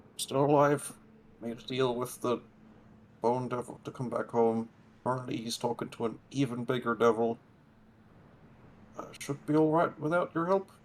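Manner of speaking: rushed, fast, high, hushed half-whisper. In a tabletop game, a character walks to the wall and replies in a hushed half-whisper. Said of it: "in a hushed whisper will reply".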